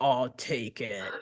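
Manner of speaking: huge, very deep male baritone, dropped low. Voicing a huge miner named Big Henry: very deep baritone voice. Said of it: "in a very baritone, deep voice".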